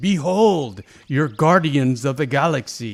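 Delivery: mock, booming, very loud, slow sarcastic proclamation. Describing the moment Ronan names the Guardians, imitating Ronan sarcastically. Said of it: "he's saying it sarcastically".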